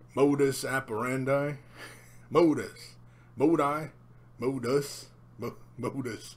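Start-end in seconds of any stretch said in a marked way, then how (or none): 0.1-1.5 put-on attempt at a real American accent. Trying to pronounce a latin phrase the american way: american accent. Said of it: "say it with a real kind of American kind of accent".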